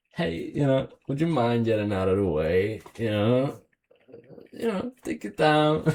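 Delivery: sweet, courteous, cute, polite little car voice. Describing a car's sound, speaker gives the car a cute car voice. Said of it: "It does have a pretty cute sound as well".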